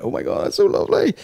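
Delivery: weepy, crying, moved-to-tears gush. Retelling how she cried while reading the card: imitating someone crying. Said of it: "she's crying and going".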